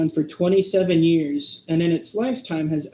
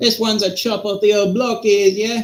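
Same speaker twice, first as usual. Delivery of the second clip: put-on British accent drifting into Australian; 4 semitones higher, 3 dB louder than usual. Trying out a british accent for a listener, attempted british accent. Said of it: "sounded more like Australian".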